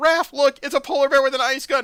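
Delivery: mock yelling. Retelling a comic scene where a character yells: imitating someone yelling. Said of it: "he just yells out".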